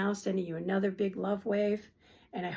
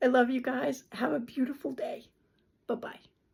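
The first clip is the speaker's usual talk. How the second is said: close to tears, full of love, high; 5 semitones higher than usual. Saying goodbye and sending love to the audience, about to cry. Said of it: "I'm going to cry now".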